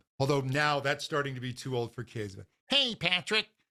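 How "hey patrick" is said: high, pitched-up bratty cartoon voice. Showing a voice exercise for vocal fold closure, SpongeBob 'hey, Patrick'. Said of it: "a really bratty hey sound, almost like a like a cartoon character".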